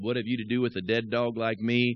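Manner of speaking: ordinary talk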